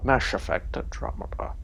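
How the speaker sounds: soft, whispered, purring Scottish movie-star accent.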